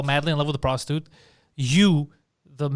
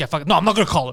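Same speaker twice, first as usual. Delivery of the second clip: acted heated, combative, aggressive worked-up outburst; 4 dB louder than usual. Retelling how a friend reacted about calling her: imitating someone getting aggressive. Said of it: "he was getting all aggressive".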